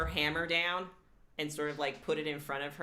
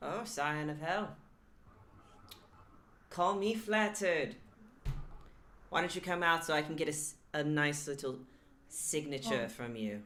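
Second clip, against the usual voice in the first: little, small voice. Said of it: "It's like a small voice coming from the tank".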